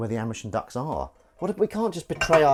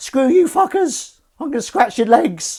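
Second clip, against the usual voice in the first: very high, shrill, very loud cat voice; 13 semitones higher, 9 dB louder than usual. Describing how his cat speaks to the household, voicing the cat. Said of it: "You do a voice, don't you, Dan?".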